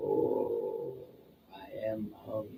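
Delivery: rough, low, creaky, swooping, leering monster voice. Voicing a creature that looks right at the player: taunting monster voice. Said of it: "this thing looks right, right at you and goes".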